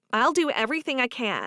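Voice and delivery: ordinary delivery, nothing marked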